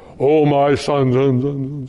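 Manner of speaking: deep, very slow voice, drawn out low, full reverb. Imagining God's voice from an old Ten Commandments movie, echoing God voice with reverb. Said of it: "With full reverb and Dolby sound".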